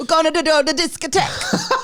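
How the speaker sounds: mock Burnley-sounding accent. Joking about a Europe version of a theme tune: put-on accent sounding like Burnley. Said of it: "You sounded like you were from Burnley".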